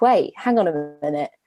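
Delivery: normal talking voice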